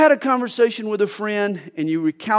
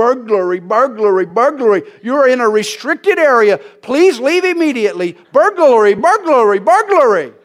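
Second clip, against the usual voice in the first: loud, shrieking, screeching automated alarm recording voice; 2 semitones higher, 6 dB louder than usual. Recalling a neighbor's burglar alarm going off outside, screeching automated alarm voice. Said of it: "this automated voice screeching".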